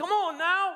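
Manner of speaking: mock shrill, very loud, high angry coach voice. Retelling how a former coach got mad during timeouts, imitating an angry coach. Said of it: "He would get mad in the timeouts".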